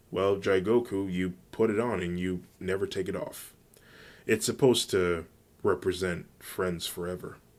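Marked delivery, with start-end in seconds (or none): none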